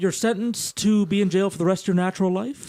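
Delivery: plain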